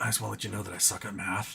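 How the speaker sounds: hushed, very quiet, confessional tone. Retelling what students told the teacher: imitating someone speaking quietly. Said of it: "They would do it very quietly".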